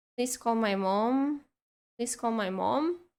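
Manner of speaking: ordinary talk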